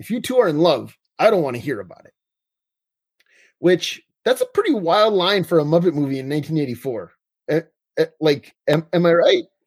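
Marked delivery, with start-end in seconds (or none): 0.0-2.1 mock dead-serious, dry delivery with no reaction. Recapping a 1984 muppet movie, quoting the dad's reply to his son: retelling a deadpan line. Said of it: "like, deadpans".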